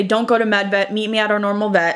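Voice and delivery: normal talking voice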